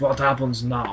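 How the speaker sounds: thick, heavy put-on Russian accent. Partner in a read-along repeating a line to show off, put-on Russian accent. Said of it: "I do Russian accent better than you can".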